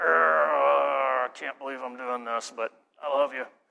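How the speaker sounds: speaking through gritted teeth. Illustrating grudging forbearance with one another, through clenched teeth. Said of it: "clenched teeth like".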